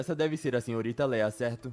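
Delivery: normal talking voice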